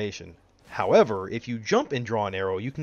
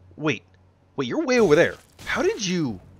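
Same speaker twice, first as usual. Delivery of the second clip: startled gasp, higher and faster; 6 semitones higher than usual. Playing a game, hit by an enemy from far away, surprised gasp.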